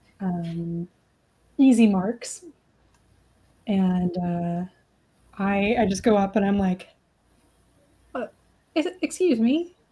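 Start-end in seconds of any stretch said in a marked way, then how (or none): 8.2-9.7 sudden, pitched-up, put-on British accent. Walking up to someone while scoping out a place, speaking in a British accent. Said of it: "That's British for some reason".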